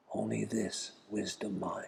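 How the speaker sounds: slow, very quiet, hushed whisper. Retelling advice a lama whispered in the ear: imitating a whisper. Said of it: "whispers in my ear".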